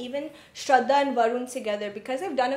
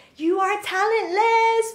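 put-on scream, higher and louder; 9 semitones higher, 6 dB louder than usual. Retelling what a casting director shouted: imitating someone shouting. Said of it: "She was shouting".

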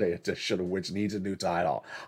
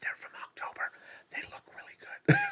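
soft, hushed, whispered aside. Greeting people one by one by name, whispering. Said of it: "I'm whispering".

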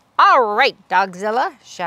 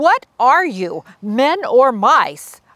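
loud, deliberate, commanding shout; 3 semitones higher, 5 dB louder than usual. The Big Cheese calls after his fleeing troops; shouting. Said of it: "shouted the Big Cheese to his troops".

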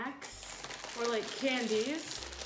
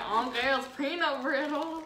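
put-on southern Illinois accent; 3 semitones higher, 6 dB louder than usual. Repeating how she once said a relative's candy name, in a southern Illinois accent. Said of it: "People like that in Illinois speak like that".

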